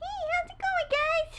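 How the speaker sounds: put-on very high, childlike falsetto kid voice. Trying out his kid voice for the others, asking if it passes: kid voice. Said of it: "I'll do my kid voice".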